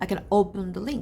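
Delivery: "open" stressed, "can" left unstressed. Lesson on unstressed can in positive sentences: stress on open. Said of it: "조동사 can의 강세가 안 들어가요... open의 강세가 들어가요".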